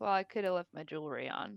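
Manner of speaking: huffy mutter under the breath. A disguised character sits down and speaks to herself, huffy mutter under breath. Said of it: "with a huff says under her breath".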